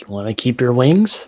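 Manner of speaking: loud theatrical whisper. Whispering to Barry during a game scene, whispering. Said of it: "I'm just gonna whisper to Barry".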